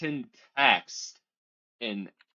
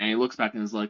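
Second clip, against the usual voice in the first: ordinary talk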